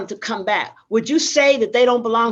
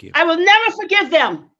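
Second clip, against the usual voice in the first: angry in every word, acted, pitched up; 7 semitones higher than usual. Told they are angry and need forgiveness, the speaker answers: angry. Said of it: "So yes, I'm angry".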